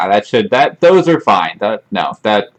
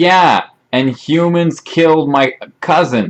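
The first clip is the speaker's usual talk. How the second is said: high, shouted voice; 6 semitones higher than usual. Voicing a kobold who answers from below: kobold shouting back up. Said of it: "the kobold below shouts back up".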